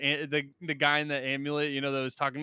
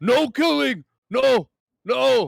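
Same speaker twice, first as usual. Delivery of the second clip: very loud, high, rough, very slow drawn-out yell; 9 semitones higher, 9 dB louder than usual. A player, the only one who heard it, yells out in character: yelling out. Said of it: "I yell out".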